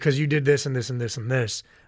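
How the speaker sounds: usual speaking voice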